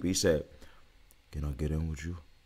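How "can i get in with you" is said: deep, hushed, soft voice, very low. Retelling what a man asked, imitating him in a deep voice. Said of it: "The voice was deep. Think about it. I gotta go deep".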